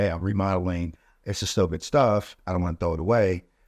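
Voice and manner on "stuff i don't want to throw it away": normal talking voice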